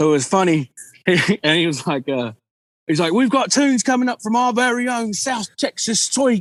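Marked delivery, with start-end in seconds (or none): 3.1-6.4 heavy Scottish brogue, pitched up, DJ style. Retelling what a dj announced at a dance, in a thick scottish accent. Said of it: "he had this real thick Scottish accent".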